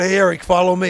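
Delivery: ordinary delivery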